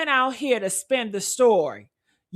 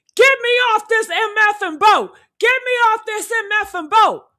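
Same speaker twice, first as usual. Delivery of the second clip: acted, furious, very high, loud screaming; 11 semitones higher, 5 dB louder than usual. Retelling how an angry man screamed to get off a boat: imitating someone screaming. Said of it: "He was screaming".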